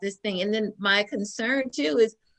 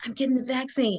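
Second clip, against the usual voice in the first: mock whispering voice; 3 semitones higher than usual. Retelling a phone call where the husband answered: imitating husband whispering.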